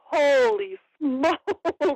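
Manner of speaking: slow, drawn-out, amazed exclamation of disbelief. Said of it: "And I just like".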